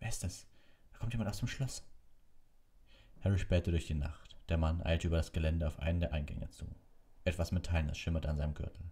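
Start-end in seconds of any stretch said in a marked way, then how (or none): 0.0-1.8 hushed, soft, high half-whisper under the breath. Narrator reads a companion spotting someone leaving the castle at night, half-whispered. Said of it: "flüsterte Hermine".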